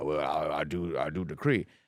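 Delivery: put-on Southern drawl. Showing how people go for a stereotypical southern accent. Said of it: "I wanna do a stereotypical".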